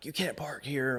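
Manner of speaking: mock yelling, toned down, mild. Retelling an argument at a boat ramp: imitating a man yelling. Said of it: "he starts yelling".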